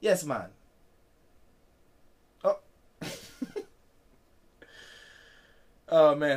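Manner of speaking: put-on Jamaican accent, laid on thick. Recalling the Cool Runnings bobsled story, the speaker breaks into a Jamaican accent. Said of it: "How's my Jamaican accent doing".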